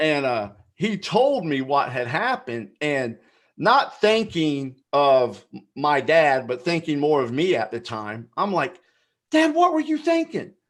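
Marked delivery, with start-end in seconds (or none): 9.3-10.4 very high-pitched yelling. Retelling confronting his dad in a store: retelling own past yelling. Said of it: "I'm sitting there yelling at my dad".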